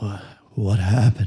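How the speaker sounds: very deep, heavy, bassy gargoyle voice. Narrator voicing a gargoyle that has just woken up, very deep, bassy gargoyle voice. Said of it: "in a very deep, bassy voice".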